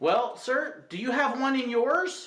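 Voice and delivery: put-on dry, snarky tone. Retelling a reply to a guest's silly question: imitating own sarcastic retort. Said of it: "the really sarcastic me comes out".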